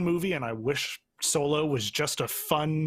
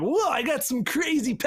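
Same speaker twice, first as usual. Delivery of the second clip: very high, chill, laid-back surfer voice; 10 semitones higher than usual. Describing a favorite comic character as an everyman, voicing him: laid-back surfer voice. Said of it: "I don't know why I'm doing like a surfer voice".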